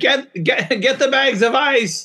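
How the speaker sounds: put-on very high, stretched-out, drawn-out yell. Retelling calling out to a wife for bags of ice: retelling own yell. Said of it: "I yelled to my wife".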